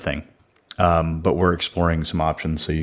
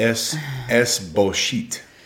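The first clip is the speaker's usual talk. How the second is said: fake Spanish accent, higher; 6 semitones higher than usual. Joking about online dating as a topic: mock Spanish accent. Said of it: "closer to, to French accent than Spanish".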